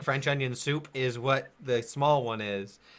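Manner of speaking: plain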